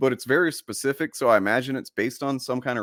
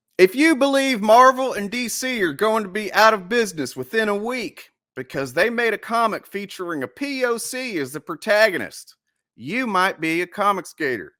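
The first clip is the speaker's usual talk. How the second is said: throat-straining, strained, higher-pitched put-on voice; 8 semitones higher, 4 dB louder than usual. Delivering a jokey insult in a voice that hurts his throat, put-on voice. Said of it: "I can't keep doing the voice".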